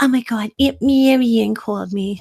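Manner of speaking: put-on light Brooklyn accent, mostly in the vowels. Speaker quoting their mom about an aunt calling, in a little brooklyn accent. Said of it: "with her little Brooklyn accent".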